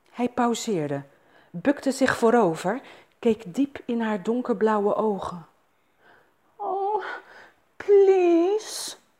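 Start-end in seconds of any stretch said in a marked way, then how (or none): 6.6-9.0 moaned, very high. A woman in a love scene speaks to the man with her; moaned. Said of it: "kreunde ze".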